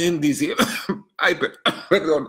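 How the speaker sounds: words squeezed out coughing. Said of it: "me atoré".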